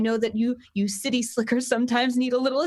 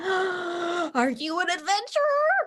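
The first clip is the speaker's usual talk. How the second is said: put-on high, eager, excited boy voice, very slow, swooping; 6 semitones higher than usual. Voicing an excited halfling boy who greets adventurers: excited halfling boy voice. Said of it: "Carp is the halfling boy who's waving at you excitedly".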